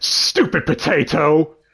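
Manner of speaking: slow, loud, angry anime heroine-style outburst. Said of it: "And she just shouts".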